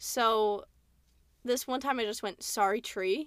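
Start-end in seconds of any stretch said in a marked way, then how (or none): 2.4-3.3 clumsy, bad put-on Australian accent. Recalling randomly flipping into accents for no reason, bad Australian accent. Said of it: "I've started doing that with Australian accent".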